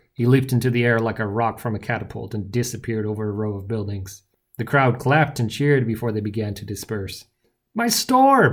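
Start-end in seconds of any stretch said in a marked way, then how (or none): 7.8-8.6 very high, booming, bellowing cry. The baker, after his shop door is smashed; bellowed. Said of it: "bellowed the baker".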